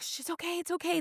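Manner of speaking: very high, soft, soothing hush. Retelling calming your baby on a flight as attendants come over: imitating soothing a baby. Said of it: "I was trying to soothe him".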